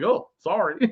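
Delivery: put-on dry, insincere sarcasm. Retelling a book scene, a character apologizing: imitating a sarcastic apology. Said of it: "Jamie sarcastically apologizes with half a smile".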